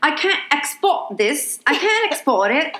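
put-on English child accent, slow and high. Quoting a friend's kid playing Minecraft: English kid's accent. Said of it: "Is that his real accent?".

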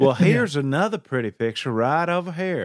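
put-on coastal North Carolina accent. Playing someone showing pictures at a museum, coastal north carolina accent. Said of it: "like a coastal North Carolina".

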